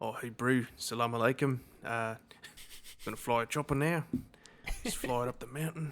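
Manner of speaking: put-on New Zealand accent. Imitating a helicopter pilot's greeting while joking with a friend, in a put-on Kiwi accent. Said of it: "in a in a Kiwi accent was hilarious".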